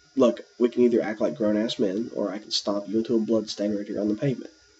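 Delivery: calm, level, coolly menacing delivery. Retelling what he told an angry driver: retelling own calm threat. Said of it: "and calmly said".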